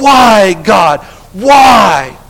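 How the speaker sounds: loud, anguished wailing cry, drawn out. Speaker reminds Karen how he would not stop, retelling someone crying out. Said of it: "And he kept crying out".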